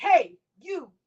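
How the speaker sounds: loud, high-pitched calling voice. Retelling how a girl at a party called out to someone: imitating a loud shout. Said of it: "it's like she's really loud".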